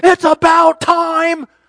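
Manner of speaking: sudden shrill, full-volume yell. Dad retelling what he shouted after the referee's call, retelling a yell. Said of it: "I yell out".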